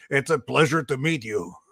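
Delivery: put-on heavy French accent, laid on strong. Retelling a handshake moment never forgotten, in Jean Béliveau's French accent. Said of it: "in a very French accent".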